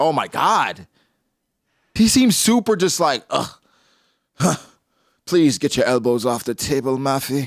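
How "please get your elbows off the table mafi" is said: put-on snobby, mock-posh British accent. Describing a man as snobby, the speaker imitates him scolding Mafi: put-on snobby British accent. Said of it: "What is that accent?".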